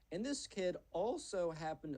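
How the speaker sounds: voice cracking, jumping up high mid-sentence. Telling a story about a Minecraft kid's friend, voice cracking mid-sentence. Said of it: "voice crack".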